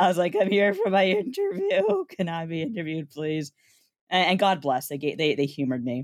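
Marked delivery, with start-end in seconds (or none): 0.4-3.5 put-on squeaky-voiced teenager voice with a swooping pitch. Retelling arriving late for a job interview: squeaky teen voice imitation. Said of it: "a squeaky voice teen".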